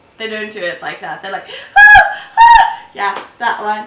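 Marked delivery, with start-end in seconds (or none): 1.5-2.8 very high, loud, slow, swooping, drawn-out passionate moans. Speaker imitating how passionate screamers sound: imitating a higher pitch. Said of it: "go higher pitch".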